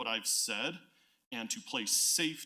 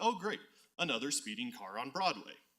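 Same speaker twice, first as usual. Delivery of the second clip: mock, very sarcastic tone. Quoting a neighbor's comment on Nextdoor: imitating a very sarcastic tone. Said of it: "put it very sarcastically".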